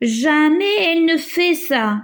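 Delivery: amazed disbelief. Speaker shows how changing the tone expresses surprise: surprised, astonished tone. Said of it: "Laquelle exprime l'étonnement, la surprise?".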